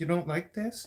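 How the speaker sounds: feeble, soft, high, weak little voice. Mocking the listener's imagined reply at the dinner table: mocking weak little voice. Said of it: "In your weak little voice".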